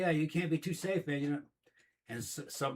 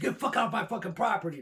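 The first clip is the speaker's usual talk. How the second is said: panicked, high-pitched voice; 4 semitones higher than usual. Retelling chasing a stranger off the property: retelling own panicked words. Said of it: "I fucking panicked".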